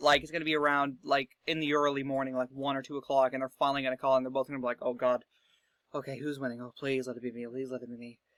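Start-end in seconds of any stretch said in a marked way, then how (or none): 4.8-8.2 nervous, anxious, fretful pleading tone. Imitating election candidates waiting for results to be called, mock-anxious. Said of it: "that's just my impression of candidates in tight races".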